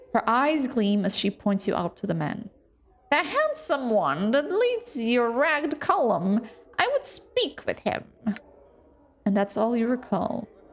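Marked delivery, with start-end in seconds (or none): 3.1-8.0 put-on harsh, grating, swooping old crone voice. Voicing a hag who points someone out to the man, in a grating hag voice. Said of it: "The hag's grating voice carries to your ears".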